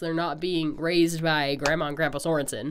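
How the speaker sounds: normal talking voice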